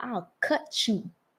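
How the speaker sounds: soft, understated, low-key put-on character voice. Imitating Bon Qui Qui's catchphrase to a friend: imitating Bon Qui Qui. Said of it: "she'd be like, ... like, in her little shit".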